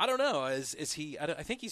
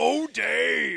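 raspy, rough, very loud, high bursting shout; 7 semitones higher, 11 dB louder than usual. Joking that a wife bursts through the wall: imitating Dave's wife bursting in like the Kool-Aid Man. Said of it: "Dave's wife's gonna come busting through like the Kool-Aid man".

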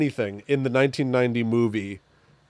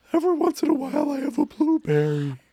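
very high, strained voice jumping upward; 14 semitones higher than usual. Quoting a line from something they were watching, voice going all high. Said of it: "His voice goes all high".

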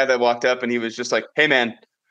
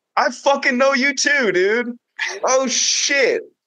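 very high-pitched put-on Philadelphia accent; 12 semitones higher than usual. Retelling a man who recognized them while walking away, in an imitated Philly accent. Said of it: "we gave him a Philly accent".

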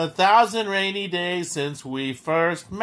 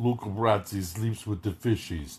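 mumbling mobster voice, lower and quieter; 6 semitones lower, 7 dB quieter than usual. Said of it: "the guy that talks with the marbles in his mouth".

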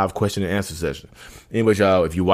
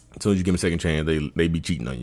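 ordinary talk, nothing marked

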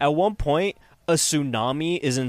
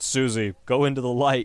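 put-on flat, deadpan monotone. Retelling a man being dragged into the water, imitating a flat monotone. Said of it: "he's so monotone".

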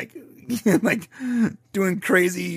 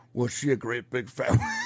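put-on movie villain accent; 6 semitones lower than usual. Two hosts trading Silence of the Lambs quotes; one tries a put-on movie villain accent. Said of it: "Am I doing the accent right?".

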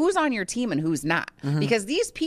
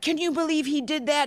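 mock very high, aggressive indignation; 9 semitones higher than usual. Retelling what a housemate said, imitating Josh speaking aggressively. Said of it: "Josh is kind of aggressively like".

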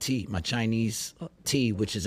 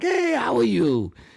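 very high, loud put-on Chinese accent; 12 semitones higher, 6 dB louder than usual. Retelling how the woman he calls ma greets him: chinese accent impression. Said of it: "that's my Chinese impression".

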